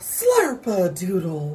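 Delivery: strong, forceful voice. Demonstrating a voice for listeners to use, strong speaker voice. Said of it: "This is your strong speaker voice".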